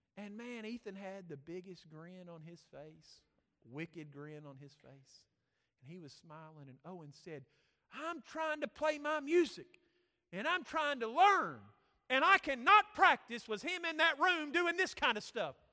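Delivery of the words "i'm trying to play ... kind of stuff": loud, mad, complaining tone. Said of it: "his brother was mad".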